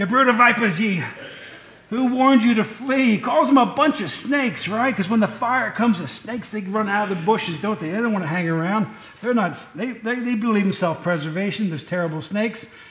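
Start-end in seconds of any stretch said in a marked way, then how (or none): 0.0-3.1 bad put-on Scottish accent. A speaker acts out a movie's John the Baptist in a bad Charlton Heston Scottish impression. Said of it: "There's my worst Scottish impression".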